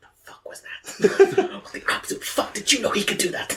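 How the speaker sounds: mouthed, barely voiced. In a tabletop game, one character mouths to another during a panic: mouthed, barely voiced. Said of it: "mouthing to him".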